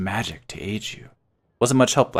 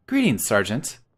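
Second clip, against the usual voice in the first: put-on female voice. A player voicing their female character greeting a sergeant, put-on female voice. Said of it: "Not that that was necessarily a better female voice".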